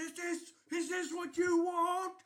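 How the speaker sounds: screaming. Voicing someone in the middle of a roaring arena crowd: screaming from the arena.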